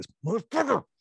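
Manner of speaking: very high-pitched, seething, boiling-over fury. One player voices the other's hidden annoyance during the game, imitating seething anger. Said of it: "you felt it boiling up and you're just like".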